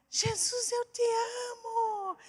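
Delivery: mock very high, shrill, slow shout, amo drawn out. Retelling how someone yelled from a bus window: imitating someone shouting. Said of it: "ele começou a gritar".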